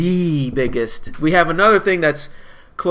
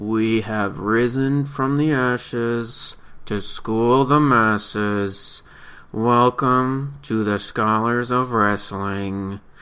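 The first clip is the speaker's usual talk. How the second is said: very slow, drawn-out delivery; 4 semitones lower, 3 dB quieter than usual. A host welcoming everyone to the scholars of wrestling, talking very slowly. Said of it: "I'm talking very slowly".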